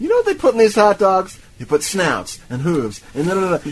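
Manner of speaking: high, fast, loud manic spiel. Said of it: "the manic energy does not stop there".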